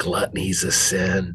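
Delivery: whispering. In a game, a character whispers into the ear of one taking all the snacks. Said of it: "he whispers into his ear".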